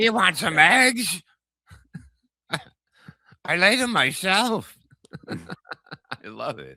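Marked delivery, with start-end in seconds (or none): 0.0-4.7 very high, very loud hen-woman voice. After another speaker compares someone's voice to hers: Chicken Lady voice. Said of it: "now he sounds like that chicken lady".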